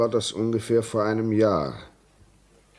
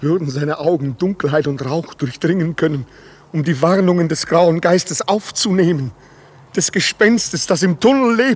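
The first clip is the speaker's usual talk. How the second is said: trembling, climbing much higher and louder, agitated. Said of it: "Sie zittern wie Espenlaub".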